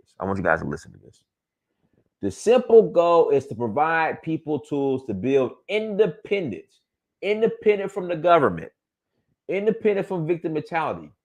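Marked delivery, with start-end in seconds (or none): 2.2-11.0 slow, deliberate reading aloud with raised pitch. Telling the guys to listen as he reads the statement, reading very slowly. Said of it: "I'm gonna read this real slow".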